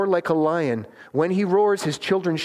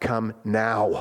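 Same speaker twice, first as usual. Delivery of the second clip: low, firm fatherly voice, calling out; 7 semitones lower than usual. Speaker acting out a father calling his children straying in a forest: dad voice. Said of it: "you know the dad voice".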